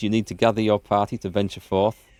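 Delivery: normal talking voice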